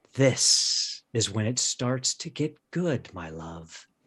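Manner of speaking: throaty, seductive lover's voice. Your lover speaks into your ear, in a throaty voice with erotic promise. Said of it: "in a throaty voice laced with erotic promise says".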